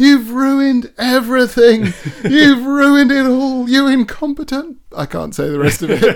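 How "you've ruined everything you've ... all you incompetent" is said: shrill, very high screaming tirade. Recalling their dad in the water screaming at a rescuer, retelling a scream. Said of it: "He's just screaming at him".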